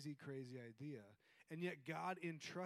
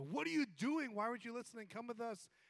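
play-acted frantic, freaked-out outburst, high and loud; 9 semitones higher, 7 dB louder than usual. Retelling the story of the son left at the temple: Mary freaking out. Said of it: "she's freaking out and is like".

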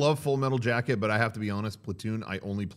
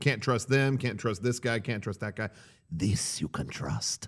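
soft, hushed, fatherly dad voice; 5 dB quieter than usual. Recapping a movie scene about steel, speaker does a dad impression. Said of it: "that's a good dad impression".

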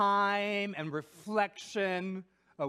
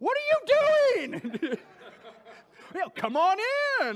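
mock very high swooping sarcasm, drawn-out "you"; 12 semitones higher, 7 dB louder than usual. Retelling what they say to other drivers from the car, mock-sarcastic. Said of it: "like the sarcastic".

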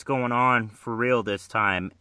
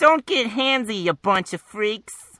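cartoon voice pushed way up; 11 semitones higher, 5 dB louder than usual. Reading a comic page aloud, voicing a line: Harley Quinn voice. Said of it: "that almost sounded like Tara Strong".

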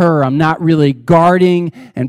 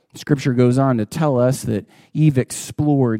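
normal talking voice

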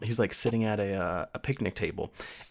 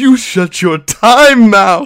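very high, very loud, shrill, slow drawn-out yell; 13 semitones higher, 22 dB louder than usual. Retelling a character's line from the episode: imitating a shout. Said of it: "he just shouts".

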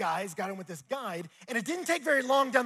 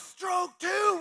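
mock yelling, higher pitch; 19 dB louder than usual. Retelling a rafting trip, acting out a guide shouting an instruction once again, in a retold yell. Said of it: "right when I yell".

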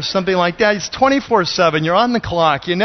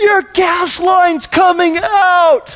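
put-on very high, shrill little old lady yell; 12 semitones higher, 5 dB louder than usual. Retelling how a woman yelled at the speaker, imitating an old lady yelling. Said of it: "this little old lady voice just started yelling at me".

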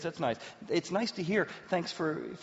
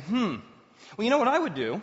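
put-on, raised, self-righteous, condescending, know-it-all tone; 6 semitones higher, 5 dB louder than usual. Retelling own reply to a spouse's bad day: imitating a patronizing reply. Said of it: "so self-righteous and so patronizing".

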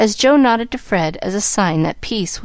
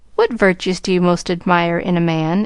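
plain

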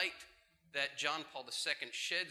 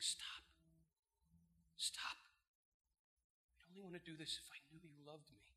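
feeble, faint, weak, soft little voice; 2 semitones higher, 11 dB quieter than usual. Retelling what a girl said to a guy in his room, imitating a weak voice. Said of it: "this weak voice saying".

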